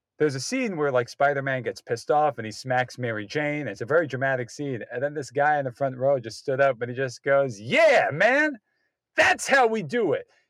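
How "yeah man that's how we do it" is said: very slow, drawn-out, swooping, approving holler. Retelling a moviegoer's outburst in the theater: imitating someone yelling. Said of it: "the guy in the theater just yells out".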